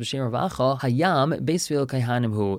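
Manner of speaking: plain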